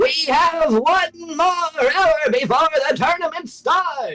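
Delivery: very high, booming intercom announcer voice. Announcing over the intercom before the tournament, a booming intercom announcement. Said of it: "a booming voice over the intercom".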